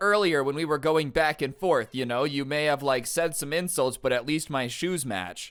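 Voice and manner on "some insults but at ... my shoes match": normal talking voice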